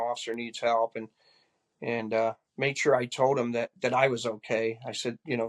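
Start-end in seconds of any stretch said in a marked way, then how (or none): none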